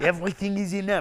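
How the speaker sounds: put-on thick French accent. Retelling a friend's speech about America being broken: imitating a thick French accent. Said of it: "he's a really thick French accent".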